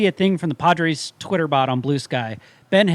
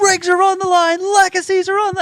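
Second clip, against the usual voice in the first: play-acted ranting yell, very high-pitched and worked-up; 4 dB louder than usual. Retelling being yelled at during a stage show: imitating Stephen A. Smith yelling. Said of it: "He started yelling, like, at me".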